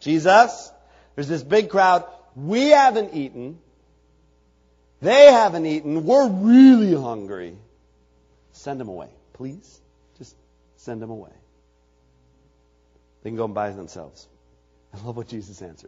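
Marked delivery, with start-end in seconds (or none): 0.0-14.3 put-on whiny, sing-song whining voice. Acting out the disciples asking jesus to send the crowd away: imitating the disciples' complaining tone. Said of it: "I kinda have a sense of what the tone of voice".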